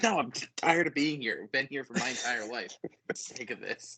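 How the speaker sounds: acted-out cross, exasperated, super mad grumble. Retelling how she gets upset stepping back into the house, imitating her being super mad. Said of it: "she's like super mad".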